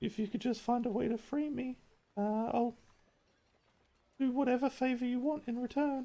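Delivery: faint, very high-pitched voice. Narrating a game, voicing a faint voice in a player's head: faint voice. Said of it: "you hear a faint voice in the back of your head say".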